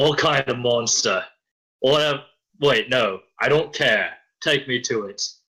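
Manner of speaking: calling out loudly, shouting. Playing a constable demanding to be taken to the monster: shouting. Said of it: "I sorta shout".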